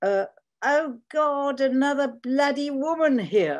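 very high, loud, drawn-out shout at top of voice. Speaker retells a man shouting to his retinue of boys, imitating someone shouting. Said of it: "he shouts at the top of his voice".

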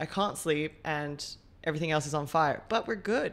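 plain

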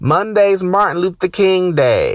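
acted, sudden, loud, high yell. Retelling walking past a woman's office, retelling a woman's yell. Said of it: "she yells out of nowhere".

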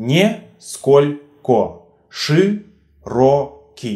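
very slow, split syllable by syllable. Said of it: "More examples".

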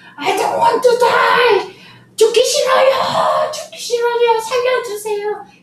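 play-acted very high, slow, drawn-out terrified scream. Retelling a captive man's last words seen on TV, imitating screaming in terror. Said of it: "He was screaming like that".

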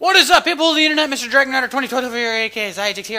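way-too-fast, rushed, loud rapid-fire delivery. Video creator greeting the internet audience and giving his name, speaking way too fast. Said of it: "I'm speaking way too fast".

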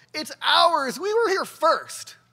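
put-on high, loud yelling in a kid's voice. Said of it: "jumps up and yells".

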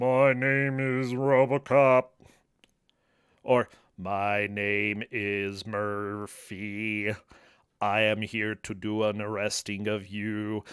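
low, slow, even droning monotone. Discussing how the cyborg officer talks, say it in a monotone RoboCop voice. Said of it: "it's a kind of monotone-ish".

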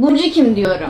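high-pitched, suspicious, accusing voice.

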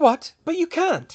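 sudden, high-pitched gasped delivery. Hermione answers the witch's refusal, gasping. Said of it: "Hermione gasped".

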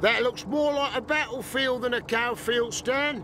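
high, carrying, loud shout. Reading a story aloud, a man from the garage calls out to Stan, shouting. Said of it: "shouted Walter".

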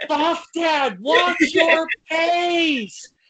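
loud yelling. Retelling yelling at a wrestler during a match: imitating own past yell. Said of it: "I start yelling".

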